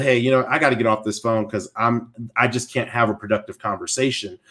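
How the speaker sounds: plain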